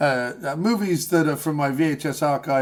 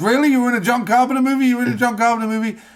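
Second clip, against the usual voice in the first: put-on very high, eager, rapid-fire excited disbelief; 9 semitones higher, 4 dB louder than usual. Acting out an imagined reply to news of a movie role: imitating Patton Oswalt getting excited. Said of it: "he'll get all excited and aroused".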